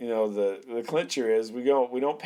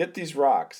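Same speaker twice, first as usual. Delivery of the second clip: urgent, loud, put-on yelling; 2 semitones higher than usual. Retelling his wife's orders from the car: imitating his wife yelling. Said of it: "yelling at me and pointing".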